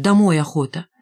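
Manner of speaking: ordinary delivery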